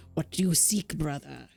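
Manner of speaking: put-on Finnish accent, very low voice. Voicing the monk at the gate questioning a traveler, in a Finnish accent. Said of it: "Now imagine this with a Finnish accent".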